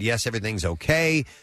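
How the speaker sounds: usual speaking voice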